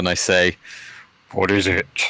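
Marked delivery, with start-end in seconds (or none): 1.3-2.1 voice deliberately made to sound big. Answering the messenger as Graven: trying to sound big. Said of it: "I try and make my voice sound big".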